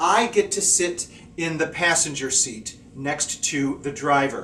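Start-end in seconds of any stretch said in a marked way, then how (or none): none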